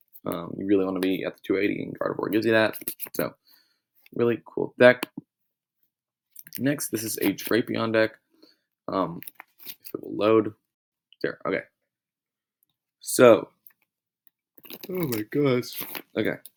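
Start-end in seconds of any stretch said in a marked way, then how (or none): 13.0-16.3 slow, drawn-out talk through a yawn. Presenting Pokémon decks and apologizing to viewers, yawning. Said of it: "I'm really sorry about all the yawning".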